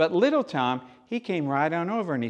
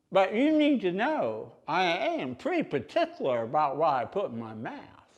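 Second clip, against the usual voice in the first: play-acted chewing voice, tobacco stuffed in cheek; 4 semitones higher than usual. Retelling a man's reply when offered cheese, imitating talking with tobacco in cheek. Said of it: "a big shawl of tobacco up here in his cheek".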